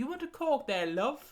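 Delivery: put-on Welsh accent, slow and drawn out. Retelling a trolley seller on a welsh train: imitating a welsh accent. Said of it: "he had a Welsh accent".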